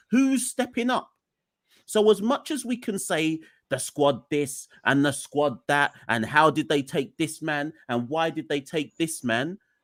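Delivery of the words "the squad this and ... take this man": normal talking voice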